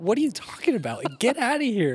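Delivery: mad, dismissive, high, swooping annoyed tone. Retelling how cheerleaders answered an interview question: imitating someone getting mad. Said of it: "And they all got way mad".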